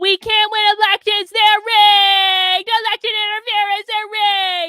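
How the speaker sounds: shrill mock outcry. Scolding viewers who skip his streams, mimicking the listeners' tone. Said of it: "That's exactly the tone of voice you do it in too".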